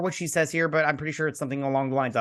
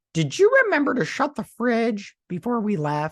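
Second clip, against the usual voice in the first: high, pitched-up hand-puppet voice; 9 semitones higher than usual. Retelling an episode where a hand talks: Elmo voice. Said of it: "it sounds like Elmo".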